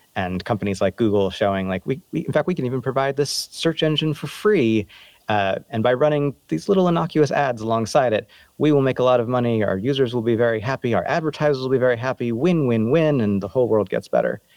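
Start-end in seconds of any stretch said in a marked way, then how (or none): 1.9-14.4 ironic, sarcastic, overly earnest corporate salesman delivery. Retelling the tech companies' win-win pitch: mock-sincere sarcastic tone. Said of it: "if you can't tell by my tone".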